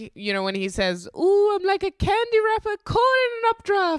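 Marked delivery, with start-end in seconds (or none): 1.2-4.0 put-on gleeful delight, much higher. Quoting a character's line in conversation, mock gleeful voice. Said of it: "he's like very gleeful".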